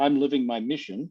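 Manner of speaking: ordinary talk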